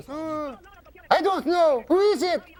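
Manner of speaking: very high-pitched woman's voice. Retelling a riddle story, the speaker voices the woman's answer in a high woman's voice. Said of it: "She's a woman, high voice".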